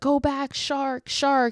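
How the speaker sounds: urgent, high-pitched, drawn-out yell. Telling a story, speaker acts out the stranded woman warning surfers: imitating Nancy yelling a warning. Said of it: "she starts to try and yell at these guys".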